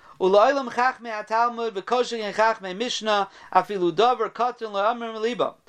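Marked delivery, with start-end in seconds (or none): none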